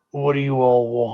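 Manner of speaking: gruff, rough-edged reindeer voice. Narrating a scene, the speaker voices a reindeer addressing the characters: gruff reindeer voice. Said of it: "hear this as this gruff voice like".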